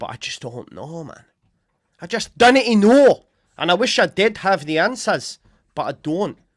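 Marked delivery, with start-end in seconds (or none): 0.0-5.4 very loud, high, put-on Scottish accent. Giving a speculative prediction, in a put-on Scottish accent. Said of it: "I'm just doing a Scottish accent there".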